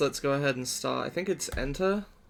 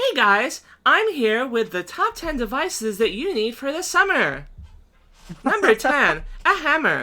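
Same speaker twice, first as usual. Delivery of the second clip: very high, slow, drawn-out synthetic text-to-speech voice; 11 semitones higher, 8 dB louder than usual. Mocking stupid TikTok videos, doing the TikTok text-to-speech voice. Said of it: "do the the text to speech voice".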